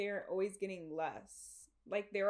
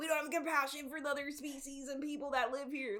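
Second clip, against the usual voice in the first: put-on pitched-up, boozy, drunken ranting tirade; 5 semitones higher than usual. Imitating Rick from Rick and Morty on a drunk tirade: Rick drunk tirade impression. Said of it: "He's like".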